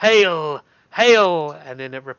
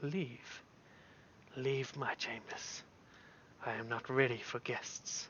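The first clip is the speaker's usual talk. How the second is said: very quiet, hushed, breathy whisper; 4 semitones lower, 23 dB quieter than usual. Game master voices Zuggtmoy, deep in meditation, to the players: Zuggtmoy speaking quietly. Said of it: "You just hear her voice quietly saying".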